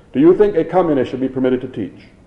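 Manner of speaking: plain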